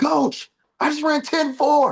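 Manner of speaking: very high, thrilled, excited scream. A coach recounts a young athlete phoning him with news, retelling excited screaming. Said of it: "He calls me just screaming".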